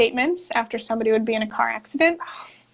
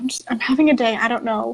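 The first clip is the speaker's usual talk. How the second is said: mock-whimpering, acted whimper. Retelling answering a boss who asked what was wrong, retelling a whimpering reply. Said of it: "she can hear me whimpering".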